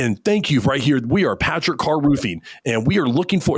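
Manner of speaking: pushy, intense, hyped used car salesman patter. Imitating a contractor once the camera light comes on: imitating intense used car salesman pitch. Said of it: "where'd the used car salesman come from".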